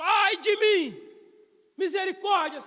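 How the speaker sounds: full-throated, very loud preacher-style shout. Retelling a man crying out in God's presence: imitating a man shouting for mercy. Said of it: "daqui a pouco ele gritou".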